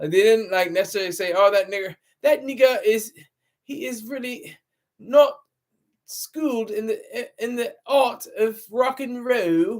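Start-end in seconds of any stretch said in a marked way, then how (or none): 1.3-9.8 slow, drawled, put-on English accent. Acting out what a band might have said, then asking for props, put-on English accent. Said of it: "That's my English accent".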